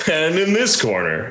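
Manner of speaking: high, fight-night boxing ring announcer style. Joking that an intro sounded like a boxing match, boxing ring announcer voice. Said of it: "the beginning of a boxing match".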